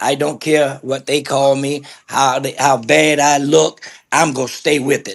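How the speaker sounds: ordinary delivery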